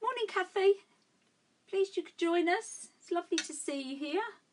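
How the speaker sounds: high-pitched livestream host voice. Greeting someone who has just joined, voice going high-pitched. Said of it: "my voice goes so high pitched".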